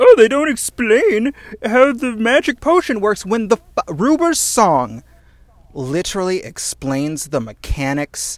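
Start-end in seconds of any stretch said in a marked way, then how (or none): 0.0-3.3 high, loud whining voice. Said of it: "he's like".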